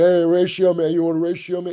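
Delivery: high, loud hollering shout. Retelling how fans on the street called out to him: imitating fans yelling across a street. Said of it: "just yelling it across the street".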